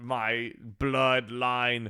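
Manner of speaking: cheesy put-on vampire voice. Quoting a line from the movie: cheesy Dracula voice. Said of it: "a cheesy Dracula voice".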